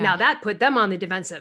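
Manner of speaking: plain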